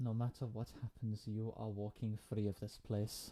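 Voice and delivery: soft, hushed, secretive whisper. Player's character leans in to whisper to her sister: whispering. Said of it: "I'm just gonna lean in to whisper to her".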